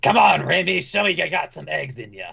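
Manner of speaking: familiar gruff, rough man's voice. Describing a scene with a glass, the speaker voices a man in a familiar gruff man's voice. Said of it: "familiar gruff man's voice".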